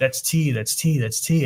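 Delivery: alarmed, urgent, repeated calling-out cry. Retelling a passenger screaming as a car brakes ahead: imitating someone screaming. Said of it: "she started screaming".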